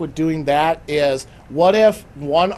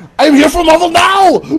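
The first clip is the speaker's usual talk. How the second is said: shrill, booming, fake Austrian accent, high and loud; 11 semitones higher, 9 dB louder than usual. Showing how the line should be said, put-on austrian accent. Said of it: "to say it with the Austrian accent".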